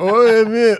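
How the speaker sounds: high, alarmed squeal through a laugh. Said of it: "And I'm like".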